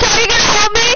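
high, loud, fast screaming. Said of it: "you should stop screaming".

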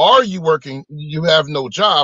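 ordinary delivery

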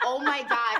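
loud yelled exclamation. Retelling standing up and yelling toward a woman, retelling a yell. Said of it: "I stood up and yelled".

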